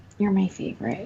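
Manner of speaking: quiet hushed whisper. Telling a story about a trip, she quotes her mom whispering. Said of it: "she whispers really quietly".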